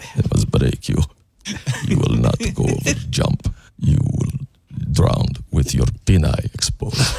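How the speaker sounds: put-on Russian accent throughout. Joking about hitting a ramp on an inner tube, in a russian accent. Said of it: "Did you turn into a Russian?".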